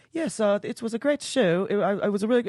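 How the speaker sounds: put-on very high, halting, stumbling British accent. Retelling a behind-the-scenes interview clip of an actor: british accent. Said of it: "he's British?".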